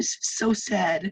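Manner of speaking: horrible, high, fake blubbering, whining cry. Retelling a woman's video where she cried, imitating her fake crying. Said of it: "it was really horrible fake crying".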